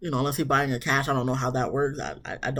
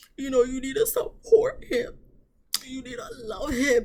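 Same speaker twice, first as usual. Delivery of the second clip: very high, weeping, tearful voice; 10 semitones higher than usual. Retelling what a crying mother said at brunch: imitating someone crying. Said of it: "Mama was crying like".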